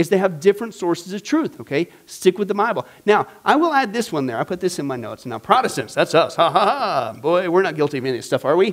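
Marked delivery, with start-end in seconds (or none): 6.4-8.7 put-on sarcastic tone. Joking with the audience that Protestants aren't guilty: put-on sarcastic tone. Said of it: "that's your sarcasm for this evening".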